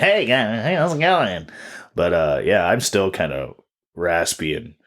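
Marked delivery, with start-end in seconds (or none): 0.0-1.5 usual high, nasal voice. Speaker with a cold showing how they usually greet everyone, in a nasal voice. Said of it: "I'm the nasally".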